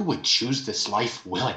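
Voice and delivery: very quiet, hushed, barely voiced, under the breath. In a role-played scene at Ravenscrest Academy, a character asks a question very quietly. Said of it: "I'm going to very quietly say".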